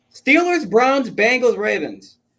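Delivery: very high-pitched, loud shouting. A panelist giving a division pick, listing teams while yelling. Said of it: "You don't have to yell like that".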